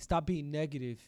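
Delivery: ordinary talk, nothing marked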